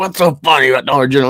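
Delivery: put-on angry voice. Retelling how a sibling reacted in the car: imitating a pissed-off sibling. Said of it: "getting pissed off".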